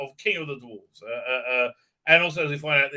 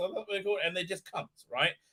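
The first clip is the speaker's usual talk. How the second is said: ordinary talk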